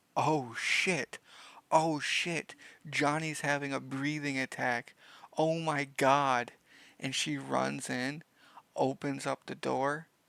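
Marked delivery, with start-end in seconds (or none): 0.2-6.6 frantic, alarmed burst. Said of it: "she's like".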